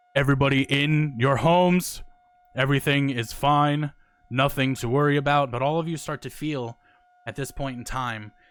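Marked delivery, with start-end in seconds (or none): 0.2-5.5 very loud, slow, resounding booming voice. A voice from nowhere addresses the people in their houses: booming voice. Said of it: "you just hear this booming voice".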